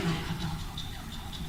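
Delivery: hushed, whispered, pleading inner voice.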